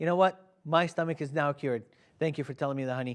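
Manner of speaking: plain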